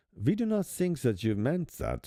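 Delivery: weak, not-great put-on German accent. Imagining what they would say in reply, in a not-great German accent. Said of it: "my German accent's not. It's not great".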